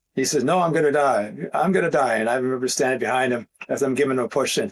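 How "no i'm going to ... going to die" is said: put-on scared, panicky child voice. Retelling a child refusing to ride without training wheels: imitating a scared child. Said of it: "he was very scared".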